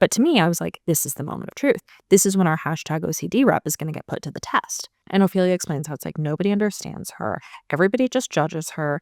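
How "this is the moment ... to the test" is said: ordinary talk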